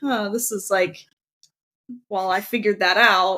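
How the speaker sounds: ordinary delivery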